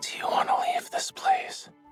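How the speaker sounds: whispered, hushed voice. Asking someone to leave this place together: whispering. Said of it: "It was a whisper".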